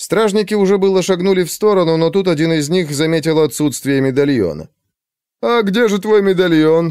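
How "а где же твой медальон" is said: knowing, sly, mocking, teasing tone, pitched up. A guard questions Alexei at the post, with a smirk. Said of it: "спросил он с ухмылкой".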